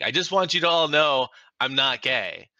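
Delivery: high, loud, bellowed shout. Retelling how someone stood up at a comedy club: imitating Chris shouting. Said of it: "stands up and shouts to everyone, like".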